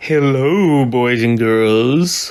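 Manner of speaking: creepy, low, spooky put-on voice. Opening another video with a greeting, put-on spooky voice. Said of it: "I'll stop with the spooky voice".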